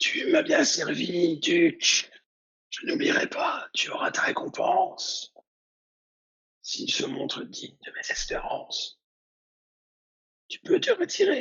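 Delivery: very high, sibilant, hissing, near-breaking voice. Game master voicing the cannibal knight addressing the duke, in a hissing, strained voice. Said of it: "Il parle avec une voix sifflante".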